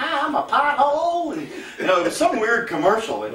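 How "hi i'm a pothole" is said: very high, slow, drawn-out southern woman's drawl. Recalling a tv commercial with a talking pothole, female southern woman's voice. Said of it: "it was a female Southern woman's voice".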